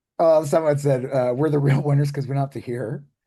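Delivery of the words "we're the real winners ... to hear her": normal talking voice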